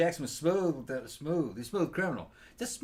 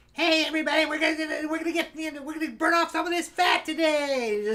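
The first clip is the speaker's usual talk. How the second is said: very high, loud, catty, over-the-top voice; 11 semitones higher, 6 dB louder than usual. Doing a quick impression of a talk show guest: high-pitched voice impression. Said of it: "I gave you all that impression".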